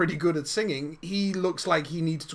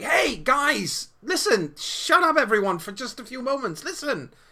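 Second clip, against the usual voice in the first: very high, loud raised shout; 9 semitones higher, 4 dB louder than usual. Voicing a student getting her class's attention: raised voice. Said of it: "raises her voice and is like".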